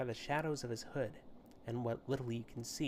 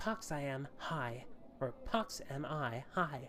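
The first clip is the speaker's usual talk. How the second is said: put-on voice of a ten-year-old girl. The figure answers someone asking who he is, in Pox's high little-girl voice. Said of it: "high-pitched voice that sounds more suited to a girl of ten years".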